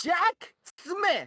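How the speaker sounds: exasperated, shrill, very high-pitched angry hollering. Telling a story, the speaker acts out a woman yelling the boy's name: retelling a yelled name. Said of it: "she sighs to herself and she yells".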